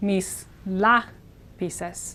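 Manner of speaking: very slow, LA stressed, other syllables subdued. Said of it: "these syllables are more subdued".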